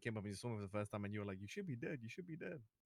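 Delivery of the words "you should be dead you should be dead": play-acted, soft, panicky, frightened voice. Mimicking how the other person reacted on first seeing them, imitating someone sounding scared. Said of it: "You sounded pretty scared".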